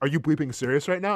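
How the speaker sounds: put-on calm, unemotional, stern, level parent voice. Retelling confronting a stranger who puked on him: imitating a stern parent tone. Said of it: "like a parent".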